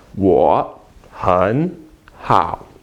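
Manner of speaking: 很 pronounced with rising second tone. Showing learners a tone change in the phrase: second tone on 很. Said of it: "I will make this one second tone".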